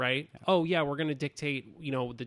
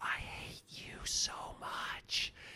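very slow, hushed whisper close to the ear. Retelling how one actor whispered into another's ear during a hug: imitating someone whispering. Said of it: "he just whispers in his ear".

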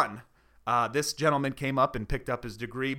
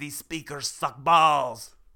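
bad fake put-on French accent. Doing an accent for a partner to guess its national origin, in a bad fake french accent. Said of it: "That's French".

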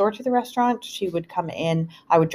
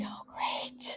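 mock mutter under breath, much quieter. Retelling a reaction to mom being stuck, muttered under the breath. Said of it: "Under my breath".

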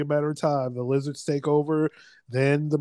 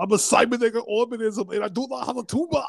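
put-on Austrian-accented machine voice, pitched up; 8 semitones higher than usual. Joking that takeover machines all sound austrian: austrian accent. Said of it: "they all sound Austrian".

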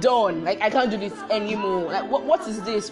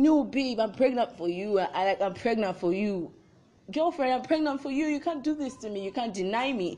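put-on weepy, sobbing, tearful voice; 5 dB quieter than usual. Retelling a boyfriend's tearful plea to his girlfriend: imitating someone crying. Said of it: "our dude was crying like".

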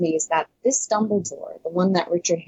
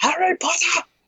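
put-on aggressive, angry wizard voice shout; 12 semitones higher than usual. Mocking a scene with an aggressive wizard: Michael Gambon's aggressive Dumbledore shout. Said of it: "you have Michael Gambon being like".

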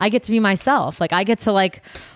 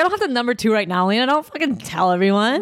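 normal talking voice

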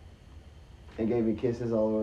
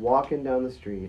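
ordinary talk, nothing marked

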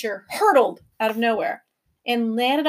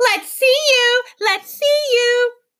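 very high, loud, shrill jeering, laughing while speaking; 12 semitones higher, 5 dB louder than usual. Unseen voices echo the professor's challenge back at him, mocking, laughing shrilly. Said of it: "mocked the voices, laughing shrilly".

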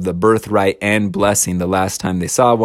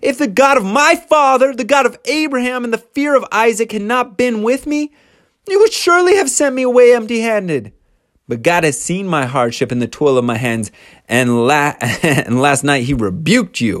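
put-on yell, higher pitched; 12 semitones higher than usual. Retelling a son-in-law's rant at his father-in-law: imitating someone yelling. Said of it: "And he yells".

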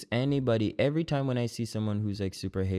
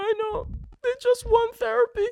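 put-on crying voice, higher and louder; 6 dB louder than usual. Retelling a TV therapy scene where Claire is crying: imitating Claire crying. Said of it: "she was crying".

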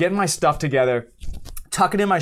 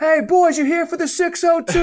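mock, very high, shouted call; 13 semitones higher, 3 dB louder than usual. Retelling a cop calling across the street to firemen: imitating someone shouting. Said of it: "the cop shouts out across the street".

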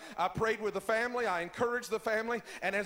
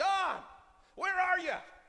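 acted, high-pitched screaming; 9 semitones higher than usual. Retelling a brother's phone call, imitating someone screaming. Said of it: "he's screaming in the phone".

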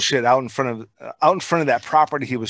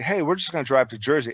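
usual speaking voice

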